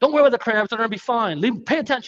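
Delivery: mock urgent, barked, fast, high-pitched yell. Retelling how his uncle yelled at him and his cousin, imitating uncle yelling. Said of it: "yelled at me".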